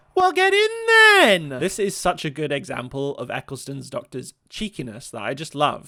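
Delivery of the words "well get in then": very high, very loud, cheeky shout. Voicing the Doctor answering Charles about the coach: imitating a yell. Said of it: "the Doctor yells".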